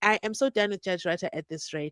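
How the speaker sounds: ordinary talk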